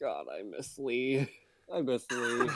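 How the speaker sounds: slow, muttering half-whisper. Voicing a character at a table with others: half-whispering to himself. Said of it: "whispers to himself".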